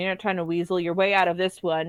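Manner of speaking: ordinary talk, nothing marked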